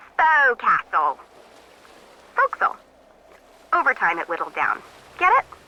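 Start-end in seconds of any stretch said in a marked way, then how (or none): 0.2-2.8 unschooled, swooping English seaman's accent. Showing how the word is really pronounced, in an uneducated english sailor accent. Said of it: "like an English sailor with no formal education".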